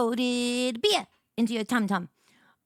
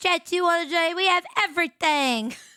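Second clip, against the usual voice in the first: terrible, bad fake put-on English accent; 7 semitones higher than usual. After thanking a viewer for a tier one subscription: terrible English accent. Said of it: "My terrible English accent".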